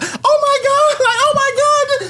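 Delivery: freaked-out exclamation, very high, slow and drawn out. Retelling how a partner reacts to a magic show: imitating a freaked-out woman. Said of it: "freaked out over this shit and she might just be like".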